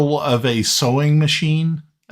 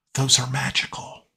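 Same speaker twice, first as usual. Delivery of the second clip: whispering, quieter; 5 dB quieter than usual. Voicing a character who speaks into a player's ear: whispering. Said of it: "whispers in, uh, in your ear".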